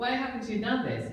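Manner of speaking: normal talking voice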